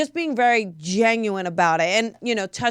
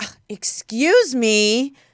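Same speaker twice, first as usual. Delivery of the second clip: acted, sarcastic, put-out, snide and snarky tone; 3 semitones higher than usual. Retelling how a TSA worker responded after being bumped, mimicking a snarky voice. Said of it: "in a snarky voice".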